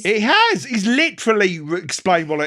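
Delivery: wound-up, very loud, shrill high-pitched shout. Arguing with the other speaker over whether it's been explained: shouting, wound up. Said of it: "I've got to stop shouting in this".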